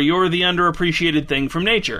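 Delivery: ordinary talk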